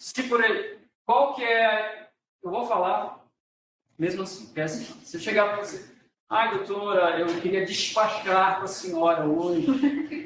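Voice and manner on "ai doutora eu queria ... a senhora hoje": strong, laid-on Carioca accent. Showing how a Carioca addresses a 'doutora', strong Carioca accent. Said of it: "aquele jeito que o carioca fala".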